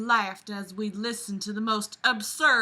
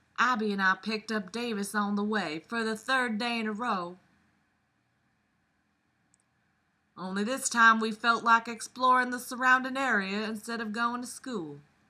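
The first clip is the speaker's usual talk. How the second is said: put-on Southern belle accent. Reading a story aloud, starting with a Southern belle accent. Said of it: "I'm gonna start with Southern Belle".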